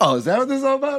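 rattled-off fake surprise.

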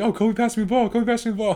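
acted-out, thrilled, very high-pitched excited gushing. Recounting a player's postgame after a Game 7 three, imitating an excited player. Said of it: "he was all excited after a postgame".

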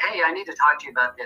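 somewhat edgy, pushy, confrontational tone. Showing how people approach someone about an issue, with an edge. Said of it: "I got a little bit of an edge in my voice. I'm coming at them stronger".

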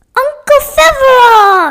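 shrill, very loud, high-pitched yell. A girl calls out to her uncle from across the room: yelled across the room. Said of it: "yelled Lenny from across the room".

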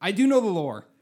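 very loud, high, angry, heated insistent protest. Arguing with others who are making fun of the lore, getting really mad. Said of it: "But you're getting really mad about it".

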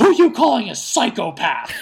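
very loud, shrill, violent scream. Retelling a movie scene at a bar, imitating Munson screaming. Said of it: "turns violently to the person next to him and just screams".

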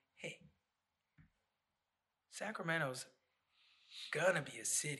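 normal talking voice

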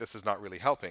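ordinary talk, nothing marked

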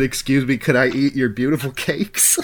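ordinary talk

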